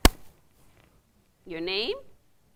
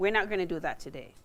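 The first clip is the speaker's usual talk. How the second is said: normal talking voice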